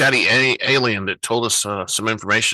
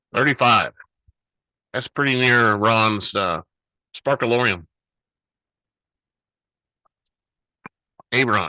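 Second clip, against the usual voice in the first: talking with mouth full of food. A show host comments on a shop's hangar location, talking with mouth full. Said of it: "Didn't mean to have a mouthful of food".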